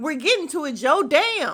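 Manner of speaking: mock exasperated outburst. Retelling what someone shouted back when asked to review a movie: retelling a loud outburst. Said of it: "I have never heard Parks that loud".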